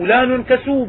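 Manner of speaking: ordinary delivery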